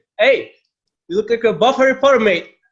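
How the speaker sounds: put-on shrill, very high, yelled Australian accent. Retelling how a stranger at a festival yelled the nickname: imitating an australian guy yelling. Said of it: "some Australian guy yelled at me".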